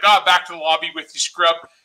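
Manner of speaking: normal talking voice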